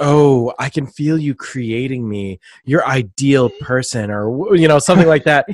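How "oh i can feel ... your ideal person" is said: slow, drawn-out, sexy, sultry delivery. Retelling what a character says: imitating a sexy Jessica Rabbit voice. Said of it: "she says it all sexy and, like, Jessica Rabbit-like".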